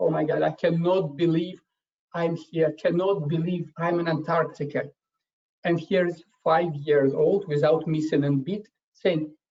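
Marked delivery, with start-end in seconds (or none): 0.0-4.8 acted, overwhelmed, awed, almost tearful gush. Retelling a woman's words on reaching Antarctica, imitating someone almost in tears. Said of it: "She almost in tears said".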